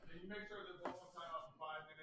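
talking low. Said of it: "I'm talking low".

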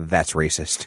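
put-on deadpan delivery. Retelling how a guy answered his knife joke: retelling a deadpan reply. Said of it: "the guy turns to me deadpan and goes".

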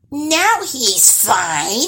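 high-pitched cackle, laughing through the words. The troll's daughter checks on the boy after eight days, cackling. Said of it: "she cackled".

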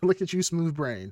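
mock, high, teasing, mocking taunt. Retelling laughing at a partner over a TV commercial: retelling mocking someone. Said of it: "did you laugh at her and mock her".

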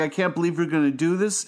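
plain

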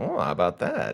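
pigeon character voice. Reading a picture book's pigeon aloud to another speaker: pigeon voice. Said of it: "the voice I always do for him".

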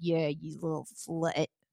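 low, soft, degrading dirty-talk tone. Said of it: "it's like".

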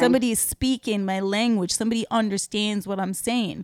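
ordinary delivery

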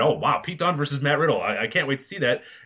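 normal talking voice

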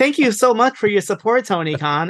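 flat computer-read text-to-speech voice. Comparing to another text-to-voice message: imitating Shibata's text-to-speech voice. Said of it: "It's the same, like, voice and everything".

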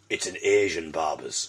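very low hushed voice. Retelling a man's reply to the speaker's question, retelling a lowered voice. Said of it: "he sort of lowered his voice and went".

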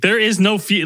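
normal talking voice

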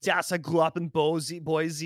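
put-on Austrian accent. Mocking a european actor's american character names: austrian bodybuilder accent. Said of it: "if you sound like an Austrian bodybuilder".

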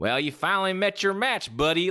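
put-on Tennessee southern accent. Retelling what a lady in the front row said, southern Tennessee accent. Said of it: "in her southern accent".

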